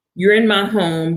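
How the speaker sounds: plain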